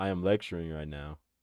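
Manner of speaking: put-on deep, quiet teacher lecturer voice. Retelling how a man answered his phone during class, imitating his deep voice. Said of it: "in his deep ass voice".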